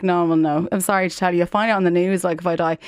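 plain

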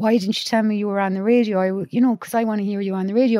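ordinary talk

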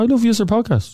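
put-on everyday Dublin accent. Retelling the compliment Natasha paid the podcast, imitating Natasha's Dublin accent. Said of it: "in a normal Dublin accent".

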